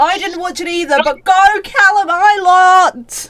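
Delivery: very slow, loud cheering shout, "Island" stretched long. Talking IndyCar with the others, shouting. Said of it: "Why are you shouting?".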